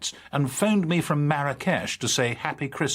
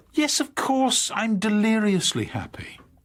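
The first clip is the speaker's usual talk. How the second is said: irritable, grudging, tetchy, pitched-up voice; 8 semitones higher than usual. Asked by the other speaker whether they are happy, answering in a tetchy voice. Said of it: "not in that tetchy voice".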